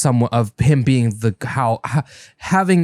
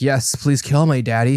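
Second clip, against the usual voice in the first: put-on psychotic masochist voice, slower. Describing a character's reaction, the speaker voices that character: put-on psychotic masochist voice. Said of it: "psychotic masochist type, you know, voice".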